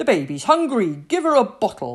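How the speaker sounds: very loud, forceful shouted delivery. Captain Pike calls to Medlar while taking the baby down to the galley: shouted. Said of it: "shouted Captain Pike".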